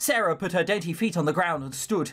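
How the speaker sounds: ordinary delivery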